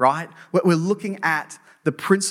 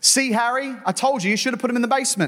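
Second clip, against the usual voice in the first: high, pitched-up, play-acted scream; 6 semitones higher than usual. Telling a joke about a widow in the attic: imitating a scream. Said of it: "she screamed".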